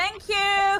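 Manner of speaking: loud yell, pitched way up and shrill. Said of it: "I'm just gonna yell back".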